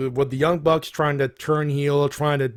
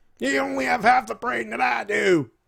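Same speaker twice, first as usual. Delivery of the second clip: rough, raspy, pitched-up wrestling promo voice; 9 semitones higher than usual. Talking about the world champion Sid Vicious, do an impression in a Sid Vicious promo voice. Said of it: "Sid Vicious promo".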